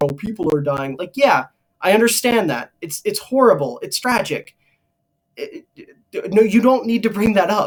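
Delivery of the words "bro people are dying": usual speaking voice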